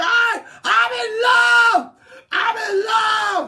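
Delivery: shrill, very loud, high, drawn-out scream. Retelling what a woman started yelling at one point, imitating someone screaming. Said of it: "she starts screaming".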